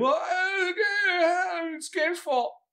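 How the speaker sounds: very high, whiny acted crying, "okay" drawn out. Recalling how the listener acted when told to turn the game off, imitating someone crying. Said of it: "you start doing the whole crying bit".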